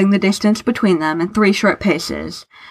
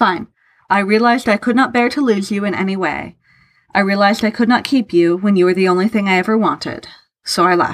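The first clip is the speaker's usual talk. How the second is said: ordinary delivery, nothing marked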